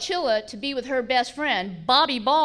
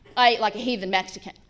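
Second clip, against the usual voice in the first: ordinary talk, nothing marked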